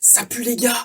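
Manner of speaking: whispering. A player's character whispers over the communication tree: whispering. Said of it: "je chuchote".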